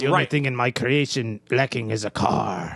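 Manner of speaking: put-on French accent. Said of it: "He does a French accent".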